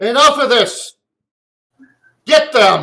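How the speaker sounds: very loud, high-pitched yell. Voicing a cleric who orders an attack: loud cleric yelling. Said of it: "the loud cleric gets even louder, basically yells".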